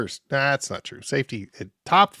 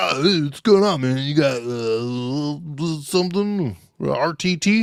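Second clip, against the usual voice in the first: very slow, drawn-out speech, long stretched "uh"; 4 semitones higher than usual. Imagining meeting another Overlander, imitating an Overlander guy. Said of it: "he's gonna be like".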